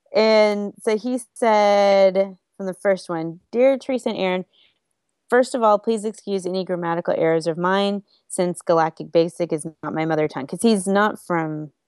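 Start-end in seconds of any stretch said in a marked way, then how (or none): none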